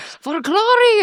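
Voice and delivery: bad Scottish accent, very high, shouted. Imagining Braveheart fighters yelling going into battle: bad Scottish accent, Braveheart style. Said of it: "my crappy Scottish accent".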